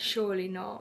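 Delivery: normal talking voice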